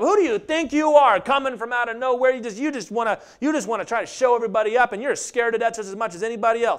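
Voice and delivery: mock angry, high-pitched, stammering rant. Acting out an angry naysayer challenging David: angry Eliab voice. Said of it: "angry naysayers like Eliab".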